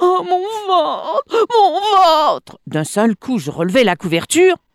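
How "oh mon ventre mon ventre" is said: very high, faltering, pained stammering cry. A woman in labour answers the narrator's repeated question, stammering in pain. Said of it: "Elle balbutia".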